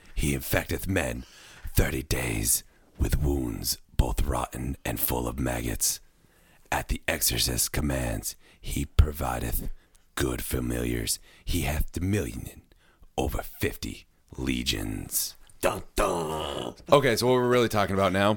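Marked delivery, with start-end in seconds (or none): 0.2-15.4 very deep, low, dramatic put-on demon narration voice. Reading out a description of the demon Sabinok, demon voice. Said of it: "my sweet demon voice".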